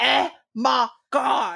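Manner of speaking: over-the-top exaggerated comic voice, creaky. Recalling how a friend from an old job did the sketch: exaggerated sketch voice. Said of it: "she would do the really exaggerated".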